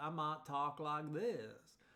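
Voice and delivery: slow, drawn-out Southern US accent. Showing how speech differs for voice recognition: Southern accent. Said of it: "If I was from the South".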